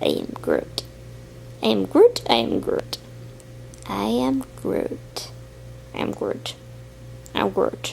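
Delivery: soft, breathy creature voice breathed out. Voicing a toy who speaks only one line: Baby Groot voice. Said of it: "an opinion by Baby Groot".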